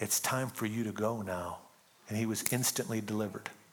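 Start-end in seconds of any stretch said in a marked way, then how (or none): 0.0-1.6 hushed, soft half-whisper. Retelling how a missionary delivered a chained man: imitating a half-whisper. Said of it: "just whispered in his ear and said".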